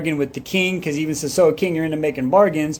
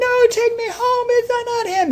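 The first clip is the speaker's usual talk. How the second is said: mock shriek, very high-pitched scream. Retelling a book scene where the heroine starts screaming: acting out a scream. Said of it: "She starts screaming".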